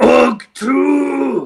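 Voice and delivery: very loud, top-of-the-lungs, full-lung shout. A player character climbs atop Fergus's cart, shouting at the top of lungs. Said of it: "shout at the top of my lungs".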